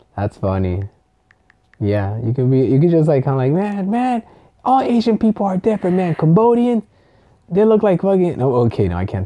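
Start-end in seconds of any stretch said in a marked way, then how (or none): 3.6-8.4 put-on American dialect accent.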